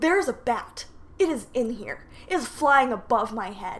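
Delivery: ordinary talk, nothing marked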